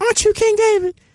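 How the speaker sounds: woman's voice, pitched very high. Retelling how a woman who waved him over recognized him, imitating a woman's voice. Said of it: "the way you making her voice sound".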